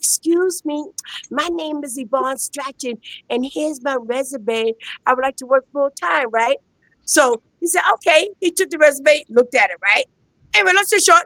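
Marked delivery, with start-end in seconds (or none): 0.0-6.3 shy, meek, timid and soft. Retelling handing her resume to a man in a suit: imitating her timid self. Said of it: "but I was all timid".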